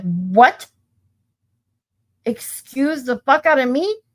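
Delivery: slow, drawn-out, indignant flipping out. Retelling the moment the caller refused the refill: retelling own outburst. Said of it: "this is where I flipped out".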